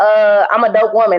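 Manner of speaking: normal talking voice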